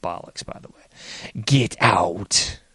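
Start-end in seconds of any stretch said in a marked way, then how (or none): 1.4-2.5 spooky, commanding, haunted-house demonic voice. Quoting the demonic voice ordering the priest out, Amityville Horror demonic voice. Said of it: "To quote the demonic voice from the Amityville Horror".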